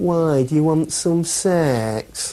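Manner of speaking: very slow, drawn-out, high, contemptuous, pathetic-sounding sneer. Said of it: "said with this pathetic sneer on his face".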